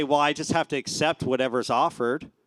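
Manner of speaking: ordinary talk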